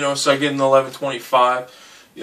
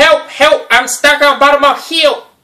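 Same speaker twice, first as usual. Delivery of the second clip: screaming, higher and louder; 12 semitones higher, 7 dB louder than usual. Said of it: "So he starts screaming at me".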